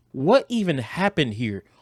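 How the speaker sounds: plain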